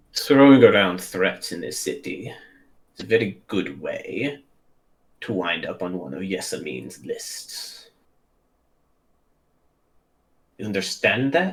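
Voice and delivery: hushed, confidential tone. Voicing a composed guard who steps forward and speaks privately: lowered voice. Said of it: "lowers his voice to where it's, it's private".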